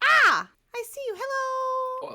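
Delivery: very high, slow, drawn-out little furry creature voice. Voicing the little furry creature that lands in Rocky's hands: voicing a little furry creature. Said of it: "pulls out glasses, goes".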